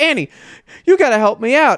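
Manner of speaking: high screaming through tears, sobbing. Speaker retells a story where a pinned man begs a woman for help: imitating screaming and crying. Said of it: "he's screaming and crying because he's like".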